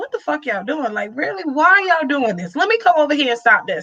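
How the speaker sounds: play-acted fed-up, annoyed, exasperated outburst. Acting out how Godzilla reacted to the others: acting out Godzilla's annoyance. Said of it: "it was more like".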